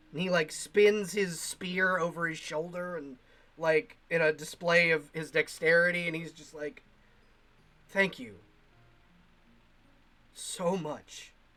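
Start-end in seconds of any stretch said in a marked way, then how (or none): 7.9-11.3 stunned, overwhelmed whisper. Voicing a freed soldier thanking the party: confused, overwhelmed gratitude. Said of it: "He's, like, confused and, like, overwhelmed with, with, um, gratitude".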